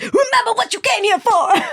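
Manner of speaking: very high-pitched, rallying, urging coach voice. Imitating the instructor who pushes her during classes: imitating the instructor's coaching voice. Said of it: "You have this voice".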